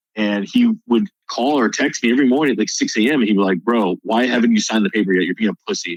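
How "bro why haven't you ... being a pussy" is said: imitated aggressive tone. Retelling the recruiter's early morning calls: imitating an aggressive recruiter. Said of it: "super aggressive".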